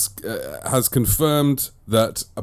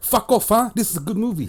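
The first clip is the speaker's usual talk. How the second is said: very high-pitched put-on South African accent; 11 semitones higher than usual. Running through how different nationalities react to a movie; South African accent. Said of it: "then we get South Africans".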